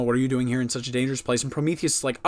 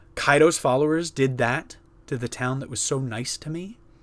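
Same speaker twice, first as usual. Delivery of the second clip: ordinary talk, nothing marked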